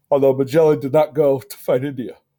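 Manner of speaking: speaking through a yawn. Listing sailors of the age of exploration, yawning while talking. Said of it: "sorry for yawning".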